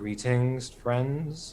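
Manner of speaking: careful, cautious, friendly tone. A player character greeting someone without spooking the swine, in a low quiet voice. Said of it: "with a low voice to not spook the swine".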